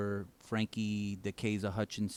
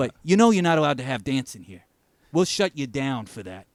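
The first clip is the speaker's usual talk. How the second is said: put-on New York accent, higher and louder; 4 semitones higher, 11 dB louder than usual. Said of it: "Your accent is great".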